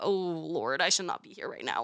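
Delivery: scared, frightened, out-of-depth voice. Retelling sitting in a traffic class: imitating own scared voice. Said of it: "I was so scared".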